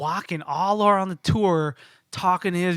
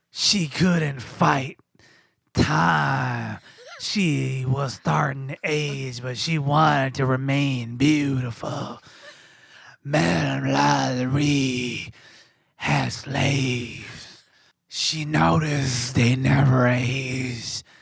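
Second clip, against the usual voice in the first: low, sultry, smoky voice; 5 semitones lower than usual. Asked to imitate the tour guide, retelling his tour story in Jack's sultry smoky voice. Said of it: "sultry, s- smoky voice".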